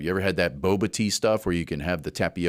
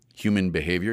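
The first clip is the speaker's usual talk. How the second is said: behavior said with a rising upturn at the end. Voicing a listener echoing the phrase, rising tone on behavior. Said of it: "you say, questioningly, with a little intonation at the end?".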